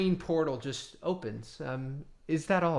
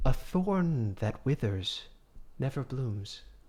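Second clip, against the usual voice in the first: close, voiced stage whisper. Telling a story, the character leans close to your ear; half-whispered. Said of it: "And he whispers in your ear and says".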